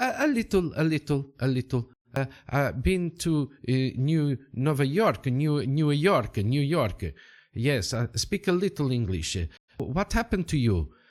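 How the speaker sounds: halting, stop-start, stumbling broken English. Voicing a Portuguese townsman who speaks a little English: Portuguese townsman's broken English. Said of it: "And the man goes".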